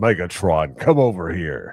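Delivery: slow, loud, big cowboy voice. Recalling the first season's trash-talking cowboy Optimus Prime: John Wayne Optimus Prime voice. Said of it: "the John Wayne Optimus Prime".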